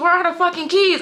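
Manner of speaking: high-pitched screaming.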